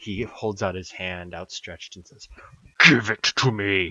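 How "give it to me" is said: very loud, booming, resounding, echoing voice. Narrating a figure holding out his hand and demanding it, in a booming, echoing voice. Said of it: "with a booming voice which echoes across the entire thing louder".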